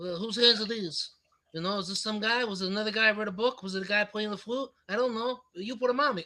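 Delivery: put-on New York cabbie accent. Speaker mocks an actor voicing a monster in a movie, in New York cabbie accent. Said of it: "he can't break that that New York cabbie talk".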